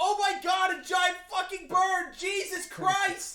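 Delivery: shocked, high, loud, drawn-out panicked yell. Imitating shocked villagers seeing the giant bird: imitating shocked villagers shouting. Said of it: "And they'd be like".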